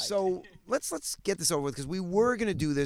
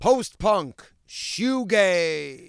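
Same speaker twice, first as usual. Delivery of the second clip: big, loud, booming announcer-style voice; 5 dB louder than usual. Interviewer opens the questions to a band, in the announcer voice. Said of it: "I'll do it in the announcer voice".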